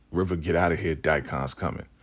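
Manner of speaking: usual speaking voice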